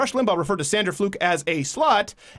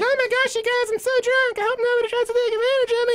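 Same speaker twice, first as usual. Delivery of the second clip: put-on very high, high-pitched, tipsy drunk girl voice. Mocking people acting in demand, the speaker imitates a girl at a bar: imitating a drunk bar girl. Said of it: "It's like that chick at the bar".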